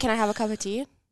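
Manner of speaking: ordinary delivery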